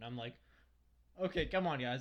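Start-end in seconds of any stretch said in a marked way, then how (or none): none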